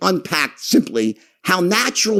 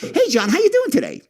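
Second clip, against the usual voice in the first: sincere, genuinely caring tone in a very high pitch; 13 semitones higher than usual. Speaker demonstrates a greeting that shows real interest, a genuinely caring greeting. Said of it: "he actually cares".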